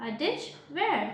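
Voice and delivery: normal talking voice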